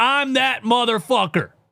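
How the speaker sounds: put-on yelling. Retelling what a player yelled in the opposing arena: imitating someone yelling. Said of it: "did that in the middle of Philadelphia and yelled".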